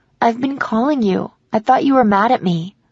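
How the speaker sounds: ordinary delivery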